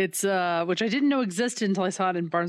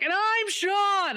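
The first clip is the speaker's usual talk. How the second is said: play-acted overeager, very high and loud; 12 semitones higher than usual. Imitating how the other speaker just introduced himself: imitating a loud intro. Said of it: "That was loud".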